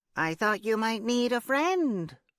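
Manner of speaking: very high-pitched nasal voice. At a first interview, a woman speaks to him, nasal, high-pitched voice. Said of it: "she'd said in this nasal, high-pitched voice".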